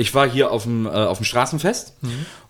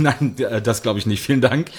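ordinary talk

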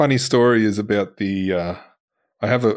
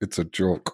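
mock, low, completely dead serious delivery; 5 semitones lower, 7 dB quieter than usual. Retelling a shop owner's answer to a question about a magnet: imitating a dead serious reply. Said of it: "dead serious".

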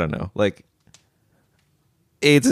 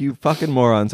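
usual speaking voice

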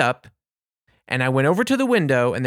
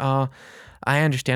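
plain

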